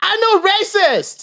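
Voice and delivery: very high-pitched indignant yell, acted out. Retelling how the guy running it answered an accusation, retelling a yelled reply. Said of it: "the poor guy running it just yelled back".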